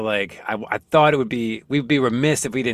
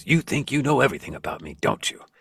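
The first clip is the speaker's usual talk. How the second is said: put-on snapping voice. Retelling a scene where Batman snaps at Alfred: imitating Batman snapping. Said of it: "he kinda snaps at Alfred and goes".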